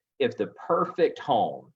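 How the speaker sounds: perfect stressed and slowed, salesy tone. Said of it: "emphasis on the word perfect".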